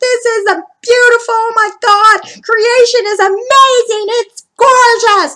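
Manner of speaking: very high, overjoyed, joyful screaming. Retelling riding a ski lift up a snowy mountain, retelling joyful screaming. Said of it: "I'm literally screaming".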